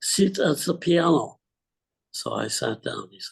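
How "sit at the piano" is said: put-on heavy Russian accent, higher, louder. Quoting a man from the Moscow Conservatory who came to the house, heavy Russian accent. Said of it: "in his heavy Russian accent".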